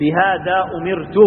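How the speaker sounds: normal talking voice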